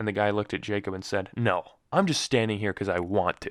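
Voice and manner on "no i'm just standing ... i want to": put-on sarcastic tone. Retelling what a stranger in line said: imitating a sarcastic reply. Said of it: "he was trying to be sarcastic".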